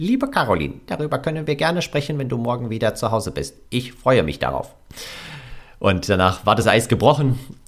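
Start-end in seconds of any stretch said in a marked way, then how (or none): 0.0-4.7 voice-assistant voice with swooping sing-song pitch. Retelling a voice message she sent: Alexa voice. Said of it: "mit dieser Alexa-Stimme".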